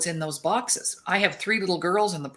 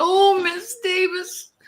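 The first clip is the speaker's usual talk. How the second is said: put-on very high, tearful, crying little girl voice; 13 semitones higher, 4 dB louder than usual. Retelling a child who was crying in the lineup: imitating a crying child. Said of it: "She's crying".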